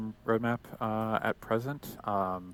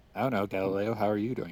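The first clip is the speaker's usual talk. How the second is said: normal talking voice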